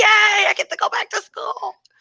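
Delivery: put-on excited little girl voice, cheering. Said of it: "she was excited about it".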